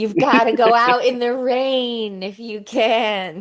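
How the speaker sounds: high voice, drawn-out "can". Asked about a Drew Barrymore impression, trying out a Drew Barrymore impression. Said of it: "know you have a Drew Barrymore impression".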